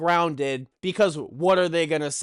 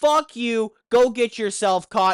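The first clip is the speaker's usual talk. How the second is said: yell, higher pitch; 5 semitones higher, 3 dB louder than usual. Retelling what he told a guy that night, retelling a yell. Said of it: "I kind of yell at him".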